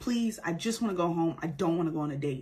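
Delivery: put-on terrified, frightened pleading. Retelling a girl's plea to a man grabbing her arm: imitating a terrified plea. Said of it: "she is terrified and trying not to cry".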